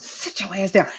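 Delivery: hushed, whispered delivery. Speaker acts out the mother the voice came from, cussing: imitating mama cussing. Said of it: "She'd be cussing".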